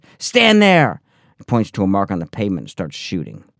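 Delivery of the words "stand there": put-on very high, shrill, barking scream. Retelling the director shouting an order to stop: imitating someone shouting. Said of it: "he keeps it up and keeps it up".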